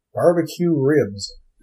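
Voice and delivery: bad, fumbling, failed put-on American accent. Trying out an American accent for a character, in a failed attempt. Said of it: "I'm trying to think of an American accent".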